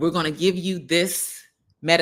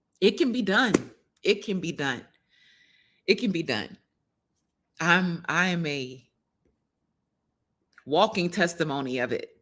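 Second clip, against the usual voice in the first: tearing up, close to tears; 3 dB quieter than usual. Speaking to an audience about your own experience, tearing up. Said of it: "I'm tearing up again".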